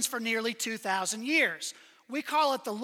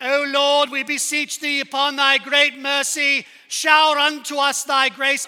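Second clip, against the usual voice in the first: sudden put-on plummy, posh London accent; 3 semitones higher, 9 dB louder than usual. Retelling how a seminary classmate from Georgia prayed, imitating a London-accented prayer. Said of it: "suddenly he was from London".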